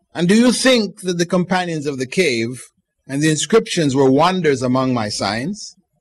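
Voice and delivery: ordinary talk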